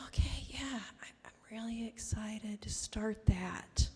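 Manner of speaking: hushed, soft, slow, subdued murmur. Retelling a phone call with a grant applicant: imitating someone speaking softly. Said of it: "he's speaking really softly".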